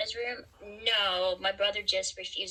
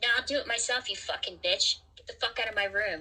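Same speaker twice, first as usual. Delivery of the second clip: put-on angry motherly voice. Acting out an expected argument with their mother, imitating mother arguing. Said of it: "arguing with my mother".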